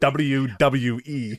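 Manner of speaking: every W in W W E spelled out in full. Imitating how Michael Cole says W W E: Michael Cole saying WWE. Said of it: "when Michael Cole says W W E".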